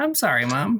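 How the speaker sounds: natural voice pitched very high. Told by a co-performer to do his voice but high-pitched: high-pitched voice. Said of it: "just fucking do your voice, but high pitched".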